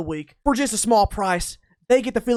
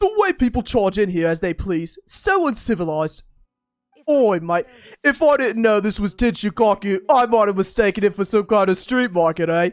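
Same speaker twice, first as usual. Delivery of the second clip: acted, put-on British accent. The speaker voices a character's lines in a put-on british accent. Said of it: "British accent".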